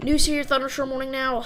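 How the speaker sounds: words tumbling out fast. Reading out a list of storm warnings: said very fast. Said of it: "I don't know why I said it so fast".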